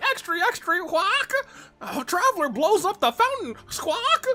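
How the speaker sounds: very high, squawking bird voice. Joking about what the bird would announce: Sir Arthur bird voice. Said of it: "that bird, Sir Arthur's about to be like".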